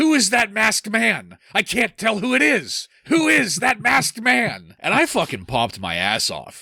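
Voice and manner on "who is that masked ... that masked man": very high, animated, swooping yell. Retelling a wrestling segment, imitating Owen Hart yelling. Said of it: "Owen ran up to him and just started yelling".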